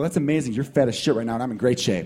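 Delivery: ordinary talk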